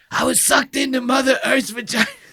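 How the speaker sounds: high, raspy impression voice.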